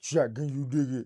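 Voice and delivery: extremely deep voice, as low as possible. Naming the best center of all time: Shaq impression. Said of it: "That's my Shaq".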